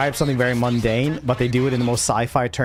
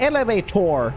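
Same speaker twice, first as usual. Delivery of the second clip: elevator said in put-on, pitched-up American accent; 8 semitones higher than usual. A british speaker saying one word with an american accent. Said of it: "I will say it's with an American accent".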